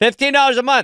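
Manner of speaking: shouted high-pitched announcer read. Host reading a sponsor ad on the show, yelling. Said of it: "Sorry, I'm yelling".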